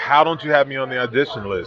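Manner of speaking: plain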